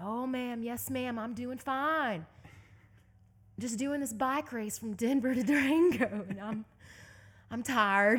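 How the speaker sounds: loud, thick, slow Southern drawl. Retelling his reply to a woman during a bike race: thick southern drawl. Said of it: "put on my Southern drawl real deep".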